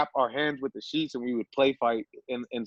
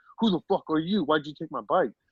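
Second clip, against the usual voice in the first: put-on outraged, furious, freaked-out voice; 4 semitones higher than usual. Retelling the bike owner's confrontation, imitating someone freaking out. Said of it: "he's freaking out on me like".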